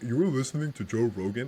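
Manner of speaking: scornful, disapproving, judgmental tone. Retelling what a passenger said on seeing the podcast, imitating a disapproving voice. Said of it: "Like, in that voice".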